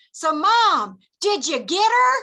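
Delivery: high, loud, drawn-out hollering yell. Retelling a kid yelling out a car window to his mom: imitating Kevin yelling. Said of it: "Kevin yells out the window".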